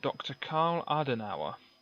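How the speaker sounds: ordinary talk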